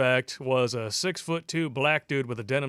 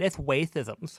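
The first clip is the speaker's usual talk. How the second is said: put-on cartoon hunter character voice. Joking about how to say racist: Elmer Fudd voice. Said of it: "spell it like Elmer Fudd".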